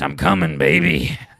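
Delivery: creaky, gruff, rough and loud holler. Retelling the moment Scott rolled out of his van, asked to say it imitating Scott's voice. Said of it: "say it in his voice".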